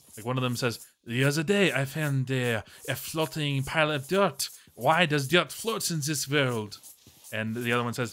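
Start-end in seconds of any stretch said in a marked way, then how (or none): 1.0-6.7 bad, horrible, clumsy put-on French accent. Quoting the dialogue of one of the millionaire Normans: bad French accent. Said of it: "Your French accent just sounds like you're in Dexter's laboratory".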